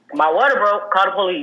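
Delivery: ordinary delivery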